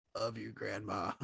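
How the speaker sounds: monotone, flat, low, quiet, barely any voice. Retelling how a woman spoke when she could not raise her voice, flat, low voice. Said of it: "very flat toned and low".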